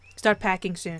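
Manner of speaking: usual speaking voice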